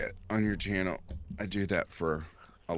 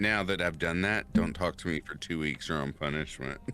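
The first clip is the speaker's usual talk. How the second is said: usual speaking voice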